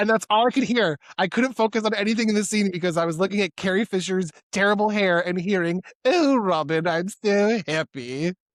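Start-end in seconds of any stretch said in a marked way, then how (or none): 6.0-8.3 odd, very slow voice, each word drawn out. Retelling a friend's impression of a film kiss scene: weird Maid Marian voice. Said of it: "this weird voice that comes out of nowhere".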